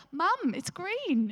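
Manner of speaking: put-on very high, sweet little child's voice. Quoting what her child said to her, imitating a sweet little voice. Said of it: "in a very sweet little".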